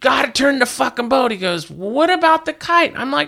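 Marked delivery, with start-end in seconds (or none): 0.0-1.3 mock yelling, high-pitched and raised like a scream. Recounting landing a big fish, reenacting screaming at him: retelling a scream. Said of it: "And I'm screaming at him".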